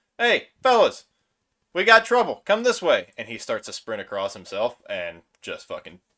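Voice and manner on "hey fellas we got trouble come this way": very shrill, very high, very loud holler. Voicing a kobold calling the others to come, hollering back. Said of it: "he hollers back at the boys".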